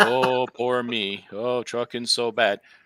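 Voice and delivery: fake miserable moan, very slow and drawn out. Showing sales callers the wrong way to sound, mock gloomy whining. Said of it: "You're not".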